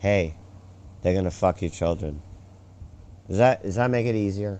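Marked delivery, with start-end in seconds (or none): 0.0-2.2 cool, calm, composed, low-toned delivery. Offering to say it calmly, then saying it in a calm, low tone. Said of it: "I can say it calmly. Would you like me to say it calmly? Will you accept it if I say it in a low tone?".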